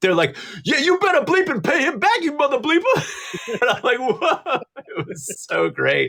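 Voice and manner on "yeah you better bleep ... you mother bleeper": put-on very high-pitched yelling. Retelling two guys behind him joining the phone call, retelling guys yelling. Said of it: "they start yelling into the".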